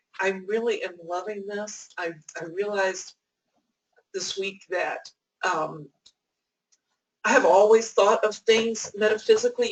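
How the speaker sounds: voice thick with tears, choked up. Speaker sharing a realization from this week with a group, choked up and teary. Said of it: "You can hear the tears. I, I know I'm getting choked up".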